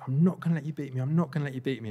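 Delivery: put-on restrained, mild half-shout, repeated. Retelling racing up a hill beside a rival: retelling a shout. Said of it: "and I was shouting".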